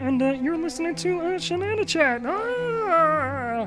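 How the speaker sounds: "ah" pitched high and drawn out. Introducing the podcast as Kermit the Frog: Kermit the Frog voice. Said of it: "Kermit the Frog here".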